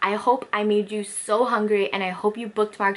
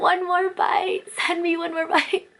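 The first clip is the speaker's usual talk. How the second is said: high, emotional voice, near tears; 9 semitones higher than usual. Speaker remembering nachos they still crave, tearing up. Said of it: "I'm tearing up".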